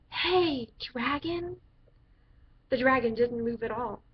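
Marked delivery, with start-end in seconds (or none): 0.1-1.5 very soft whisper, slightly higher pitch. Narrator reading a story, a girl calling to a sleeping dragon, whispering very softly. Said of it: "whispered very softly".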